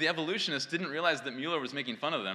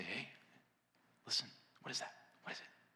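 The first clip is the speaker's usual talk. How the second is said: soft, rapid, very quiet near-whisper; 5 semitones lower, 15 dB quieter than usual. Retelling how a man speaks to his dog, in a soft voice. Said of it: "in a soft voice and say".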